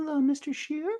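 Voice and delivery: put-on very high-pitched elderly woman voice. In an improvised bit, playing a new character greeting someone, old lady voice. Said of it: "I'm an old lady".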